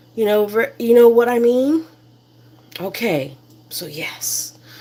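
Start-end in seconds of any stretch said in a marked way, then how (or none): 2.8-4.5 low, soft, near-whispered voice. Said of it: "I'm not sure why I started talking low like that".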